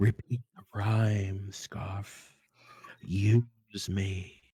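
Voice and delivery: eerie, ghostly half-whisper. Narrating a game, voicing what the wedding dress says to the player, half-whispering. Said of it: "It's it whispers".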